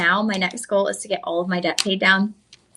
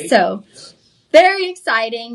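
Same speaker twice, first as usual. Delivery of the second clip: usual speaking voice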